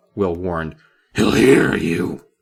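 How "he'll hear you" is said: loud, rough voice.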